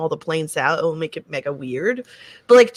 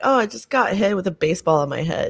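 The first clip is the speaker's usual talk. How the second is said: put-on deadpan delivery; 3 semitones higher than usual. Retelling how he answered a question about drawing in a workshop, retelling a deadpan answer.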